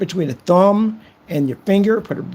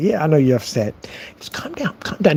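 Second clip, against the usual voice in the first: usual speaking voice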